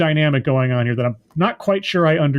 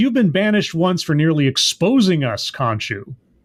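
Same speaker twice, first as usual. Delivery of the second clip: usual speaking voice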